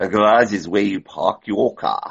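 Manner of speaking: put-on attempt at a South African accent. Trying out an accent while chatting on the show, in an attempted South African accent. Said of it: "I'm trying to do my South African accent".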